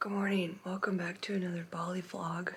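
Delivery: quiet whisper. Greeting viewers in a quiet neighborhood, whispering. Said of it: "I'm trying to whisper".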